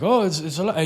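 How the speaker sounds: plain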